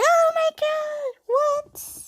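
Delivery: pig-like squeal, very high, slow, drawn-out. Retelling own reaction to an anime scene: imitating own squealing. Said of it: "squealing like a pig".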